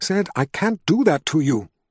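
plain reading voice

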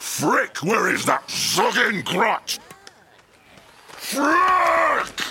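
high-pitched shout rising in volume. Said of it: "you were shouting".

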